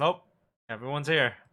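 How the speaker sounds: spoken out on a sigh. Voicing Rain, answering whether they wait for anyone else: sighing. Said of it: "he kinda sighs and sits up and goes".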